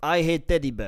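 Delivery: loud exaggerated Russian accent. Saying something Putin would say when asked: Putin impression in Russian accent. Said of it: "say something that Putin would say".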